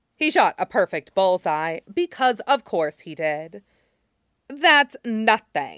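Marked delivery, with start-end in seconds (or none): 4.5-5.8 dismissive, contemptuous, swooping, sneering scorn. Jin Zixun steps up to shoot after Jin Zixuan, sneering. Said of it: "Jin Zixun sneered".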